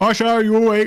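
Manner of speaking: calling out far too loud, high pitch. Knocking on a sleeping character's door in a game, calling too loudly. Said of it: "Oh, that's too loud".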